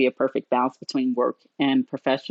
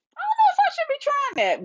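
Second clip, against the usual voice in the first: very high, hesitant, unsure squeaky inner voice. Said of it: "And I'm like".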